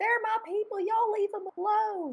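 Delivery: put-on heavy, thick Southern US accent, very high pitched. Retelling what she said while playing the frog queen, thick Southern accent. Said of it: "I had like a really thick southern accent".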